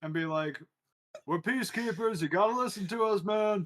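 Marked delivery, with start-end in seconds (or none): 1.3-3.7 loud, high-pitched yell in a character voice. Voicing a character calling out across a room: in-character yell. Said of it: "can I just yell out and be like".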